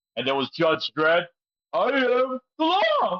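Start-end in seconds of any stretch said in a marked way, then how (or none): 1.8-3.2 very slow, high, swooping, every word dragged out. Quoting a Judge Dredd line the way Stallone says it: Stallone impression. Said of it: "the way how, uh, Stallone says it".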